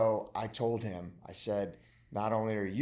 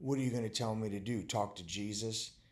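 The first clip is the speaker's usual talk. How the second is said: mock tongue-in-cheek sarcastic tone; 4 dB quieter than usual. Retelling a son's remark during a breakdown: imitating a tongue-in-cheek remark. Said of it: "he said it kinda tongue in cheek".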